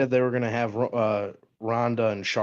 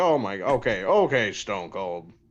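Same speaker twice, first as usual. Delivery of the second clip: very slow, swooping, drawn-out ringside commentator voice. Imitating Vince McMahon commentating: Vince McMahon as commentator impression. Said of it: "sound like Vince when he was the commentator".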